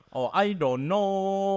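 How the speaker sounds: crude fake Chinese inflection, very high, slow, drawn out. Giving a requested example of a bad accent: imitating a bad Chinese accent. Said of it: "their, like, inflection is like".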